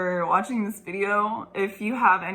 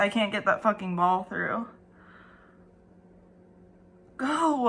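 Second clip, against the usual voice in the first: voice sounding in pain. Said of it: "that hurts".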